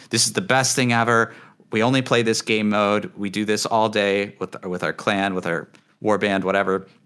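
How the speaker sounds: usual speaking voice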